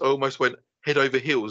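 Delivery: normal talking voice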